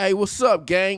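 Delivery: mock street slang delivery. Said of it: "this whole gang shit that they talking about".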